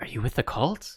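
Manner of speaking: soft, hushed, put-on whisper. Voicing a captive man asking a stranger a question: whispering in character. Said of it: "he whispers, he says".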